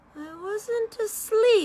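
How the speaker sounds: weak, rasping, hoarse, feeble, high voice. Reading aloud as the sleepy Dormouse just woken up: hoarse, feeble voice. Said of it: "in a hoarse, feeble voice".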